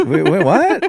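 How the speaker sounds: unsure, hesitant voice, high and loud.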